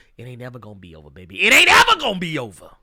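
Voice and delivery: booming, loud sing-song with swooping pitch. Quoting Kohei Horikoshi, speaker does the classic Dusty Rhodes impersonation. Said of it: "in the classic Dusty Rhodes impersonation".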